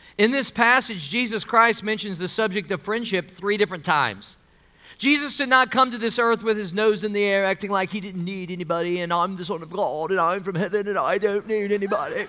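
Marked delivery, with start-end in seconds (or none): 9.0-12.3 put-on snooty, lofty English accent. Speaking about a Bible passage, voicing Jesus in an English accent. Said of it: "I don't know why I'm doing an English accent for Jesus".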